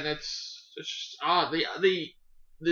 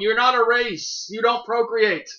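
mock full-throated scream, high and loud; 6 semitones higher, 5 dB louder than usual. Recounting watching a show, acting out screaming at the TV. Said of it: "I'm screaming at the TV".

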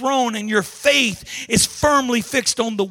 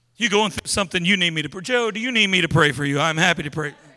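showy, fake, mock pious tone; 5 semitones lower than usual. Acting out someone offering prayer for show: mocking a hypocrite's offer. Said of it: "That's pretense".

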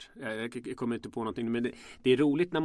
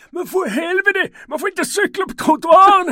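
shrill, very high, very loud scolding scream; 17 dB louder than usual. Retelling how a junkie yelled at a friend riding on the sidewalk: imitating a junkie screaming. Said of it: "den här knarkan skriker".

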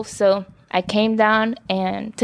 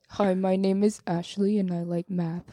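put-on manly voice, soft and low; 2 semitones lower, 7 dB quieter than usual. Asked for her podcast manly voice, the speaker introduces herself in a put-on manly voice. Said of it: "can you tell me your podcast manly voice?".

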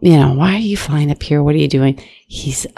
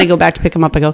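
ordinary talk, nothing marked

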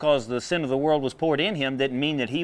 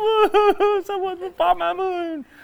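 shrill, very high fake boo-hoo sobbing; 5 dB louder than usual. Imitating a person standing there in church: mock crying. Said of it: "you're standing there crying like".

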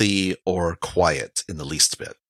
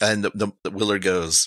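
ordinary talk, nothing marked

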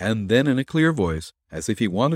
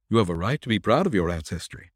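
ordinary delivery

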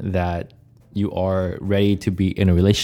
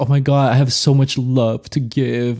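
put-on crying voice, pitched higher; 5 semitones higher than usual. Retelling the movie's ending, acting out the lover boy, imitating Mariano crying. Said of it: "He's like crying".

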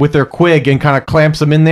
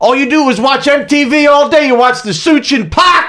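acted, squealing, very high-pitched, shrill yell; 10 semitones higher than usual. Retelling a movie scene where the chicken goth yells at Gonzo: imitating a character yelling. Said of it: "the chicken goth yells at".

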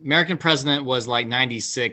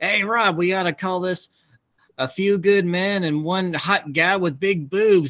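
gleeful, relishing every word, pitched up; 7 semitones higher than usual. Retelling a director's story of what an actor said, in a Jack Nicholson voice. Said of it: "in that Jack voice of his".

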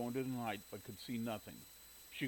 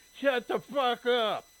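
put-on shrill, very loud, high, drawn-out, slurred yell; 12 semitones higher, 12 dB louder than usual. Reading a man yelling at barking hounds, slurring his words together. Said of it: "yelled at the hounds, slurring".

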